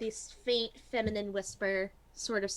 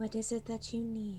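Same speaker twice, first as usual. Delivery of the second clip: breathy, whispery voice. Narrator voices a whispery voice heard around the players, in a whispery voice. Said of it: "you hear this kind of whispery voice around you".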